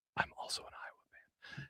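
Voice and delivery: hushed whisper, very quiet, barely voiced. Podcast host retells what a listener at a wedding told him, retelling a whisper. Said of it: "And then he whispered".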